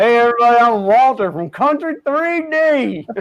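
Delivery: thick put-on country accent. Showing others how to imitate Walter, greeting everybody: heavy country accent Walter impression. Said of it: "you got to use the heavy country accent".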